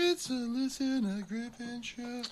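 put-on voice, pitched way up and slow.

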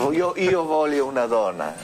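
plain

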